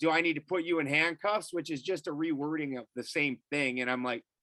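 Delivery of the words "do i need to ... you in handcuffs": ordinary delivery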